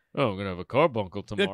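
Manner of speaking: low put-on old-man voice. Retelling eating candy, imitating grandfather's voice. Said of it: "my grandfather's voice that I'll do sometimes".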